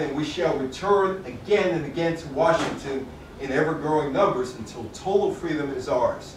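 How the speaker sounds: ordinary delivery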